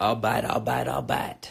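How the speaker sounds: very low, deep, rough dog voice. Doing an impression of Matthew McConaughey as a dog: Matthew McConaughey voice. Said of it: "Matthew McConaughey if he was a dog".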